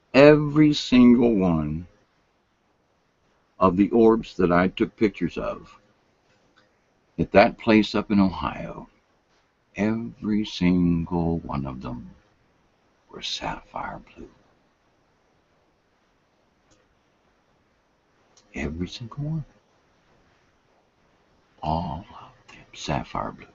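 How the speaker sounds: very low, hushed half-whisper throughout. A speaker recounting their photos to listeners, half-whispering throughout. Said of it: "I'm sorry, I'm whispering".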